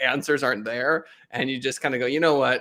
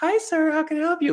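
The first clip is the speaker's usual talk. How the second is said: very high, way-too-happy service chirp. Retelling a Verizon visit, quoting the clerk greeting a customer: imitating an overly cheerful clerk. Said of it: "way too customer service happy".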